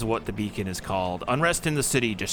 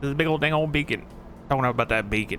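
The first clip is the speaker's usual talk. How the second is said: put-on character voice with a drawl; 3 semitones higher than usual. Reading out someone's written interpretation, Boomhauer voice. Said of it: "that's the best Boomhauer I can do".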